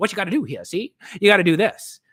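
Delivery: put-on loud, old-fashioned tough-cop cliche voice. Speaker showing his own scene, voicing the boss as a cop cliche: old-timey cop cliche voice. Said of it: "This is me going".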